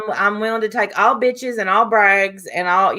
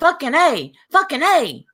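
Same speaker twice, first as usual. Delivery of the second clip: mock wild yelling, high and swooping; 7 semitones higher than usual. Warning the others what a guest will do when mad: imitating Diane yelling. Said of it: "she's gonna start yelling".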